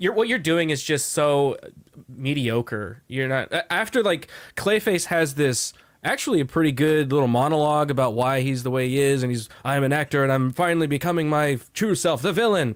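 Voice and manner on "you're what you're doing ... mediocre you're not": ordinary talk, nothing marked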